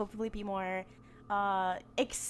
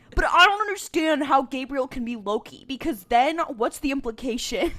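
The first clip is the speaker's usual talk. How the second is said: booming, very loud, mocking, ribbing tone; 4 semitones higher, 10 dB louder than usual. Imitating how Soups would ask about the show: imitating Soups. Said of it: "He'd be like".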